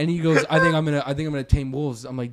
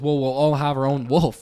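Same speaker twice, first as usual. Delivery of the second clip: mock-casual, nonchalant put-on delivery. Retelling a friend's answer about taming wolves, imitating him saying it nonchalantly. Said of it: "So nonchalantly".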